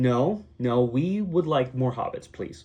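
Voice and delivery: plain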